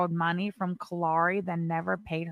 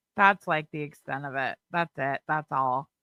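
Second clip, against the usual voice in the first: ordinary delivery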